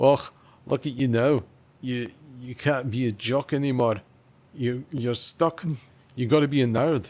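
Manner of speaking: attempted Scottish accent. Trying out a nerd bit for the other speaker: Scottish accent. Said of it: "probably try a bit of Scottish".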